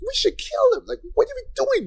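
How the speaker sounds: put-on childish whine, pitched way up. Imitating the alternate versions of a show's hero: imitating a whiny voice. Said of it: "this whiny voice of".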